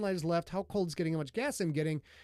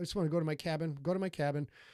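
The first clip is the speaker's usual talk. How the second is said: ordinary talk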